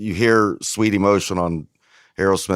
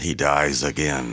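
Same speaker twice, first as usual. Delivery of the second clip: epic trailer narrator voice, lower pitch; 4 semitones lower than usual. People joking about a Passion of the Christ sequel: movie trailer voice. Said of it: "That was a good movie voice".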